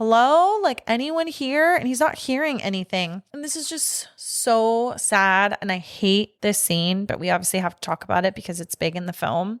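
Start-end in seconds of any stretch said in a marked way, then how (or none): 0.0-1.7 mock raised, high searching shout. Retelling a film scene where a man calls through an empty hotel: imitating someone screaming. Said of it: "screaming, like".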